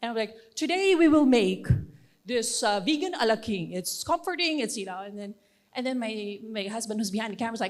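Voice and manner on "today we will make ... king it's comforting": put-on news announcer voice, much louder. Showing how she sounds in her cooking videos, putting on a news reporter voice. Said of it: "I would sound like a news reporter".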